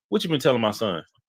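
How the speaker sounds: normal talking voice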